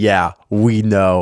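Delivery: put-on laughing while talking. Retelling how the others answered a confession: imitating people laughing while talking. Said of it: "they just started laughing, going".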